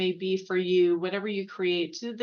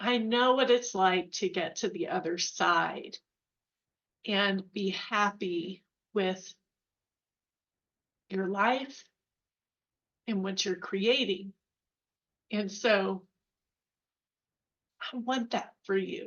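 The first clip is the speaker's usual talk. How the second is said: choked-up, emotional voice. Speaker telling listening artists what they want for them, choked up. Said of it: "I'm gonna get choked up".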